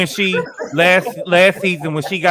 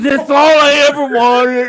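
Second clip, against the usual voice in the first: very high, shrill, loud, tearful sobbing voice; 9 semitones higher, 5 dB louder than usual. Imitating someone who was crying to a partner: imitating someone crying. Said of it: "That's how she was crying to Tom".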